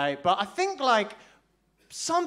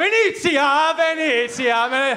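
mock-panicked voice, much higher and louder; 4 semitones higher, 6 dB louder than usual. Retelling a big guy asking which part of Italy they're from; retelling a panicked answer. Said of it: "I just panicked".

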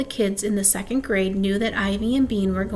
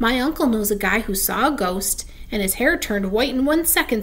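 usual speaking voice

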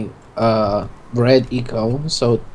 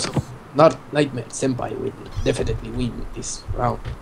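soft put-on Japanese samurai voice. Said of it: "use that Japanese voice".

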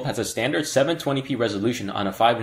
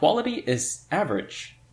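surprised, caught off guard, pitched up; 6 semitones higher than usual. Reviewing a phone's loudspeaker and its sound quality; surprised. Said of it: "You could probably hear the surprise in my voice there".

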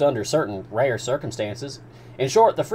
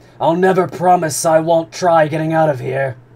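loud shouted outburst; 4 semitones higher, 7 dB louder than usual. Ned Land answers the commander: shouted. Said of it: "Ned Land shouted".

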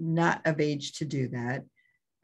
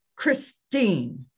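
put-on scolding tone, higher pitch; 4 semitones higher, 3 dB louder than usual. Retelling a mom catching a tattoo: imitating mom's scolding tone. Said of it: "That's what I get called when I'm in trouble".

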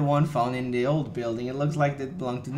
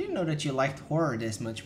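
ordinary delivery

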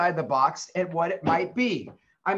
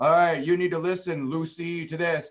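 put-on dad character voice. Showing how to read a story aloud in different voices: father voice. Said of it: "going back and forth with the different voices".

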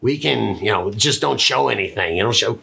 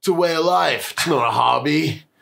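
put-on stoner surfer voice, higher; 5 semitones higher than usual. Reading a caption aloud as Jeff Spicoli imitation. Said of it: "Just my best Jeff Spicoli imitation there".

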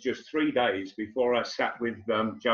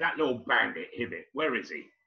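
put-on muttering, grumbling voice; 3 dB quieter than usual. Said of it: "what are you muttering about".

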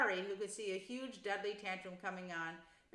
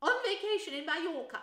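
very high, shrill, loud, curt snap; 9 semitones higher, 7 dB louder than usual. An aunt answers a family question about her friend: snapped. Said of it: "snapped Aunt Petunia".

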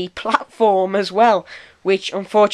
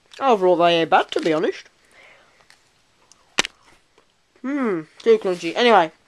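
speaking with mouth full of food. Tasting a snack for a video, talking with mouth full. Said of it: "Excuse me talking with my mouth full".

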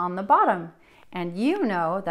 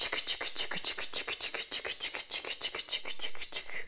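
soft, whispered chick-chick train chugging sound.

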